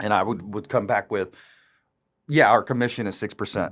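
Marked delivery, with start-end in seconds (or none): 2.5-3.7 pitch falls, landing on "percent". Answering whether you charge six percent, falling pitch on percent. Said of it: "See how that's downward inflected voice".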